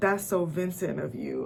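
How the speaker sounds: ordinary delivery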